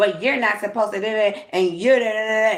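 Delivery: very rude, dismissive tone. Retelling what the lady said while pointing a pencil: imitating someone being rude. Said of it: "Being very fucking rude to me".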